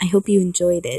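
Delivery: ordinary delivery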